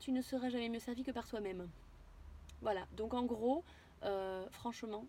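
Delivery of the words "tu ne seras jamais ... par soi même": usual speaking voice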